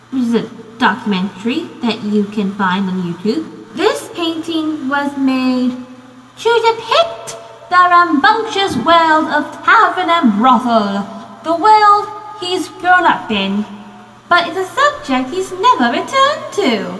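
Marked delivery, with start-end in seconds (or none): 3.7-17.0 high-pitched put-on British accent. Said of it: "That is just my, um, British accent".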